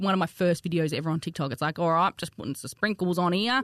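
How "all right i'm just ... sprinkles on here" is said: put-on exaggerated overdone Australian accent. Recalling one of their first TikTok videos, speaker redoes it in an exaggerated Australian accent. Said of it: "I probably put a bit more of an Australian accent on".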